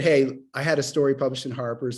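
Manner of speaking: usual speaking voice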